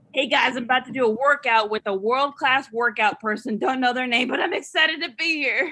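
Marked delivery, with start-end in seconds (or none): none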